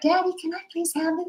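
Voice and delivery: very high, small half-whisper, pleading. Retelling asking a dad for something as a child: imitating a child's half-whisper. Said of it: "I'd whisper so mom couldn't hear".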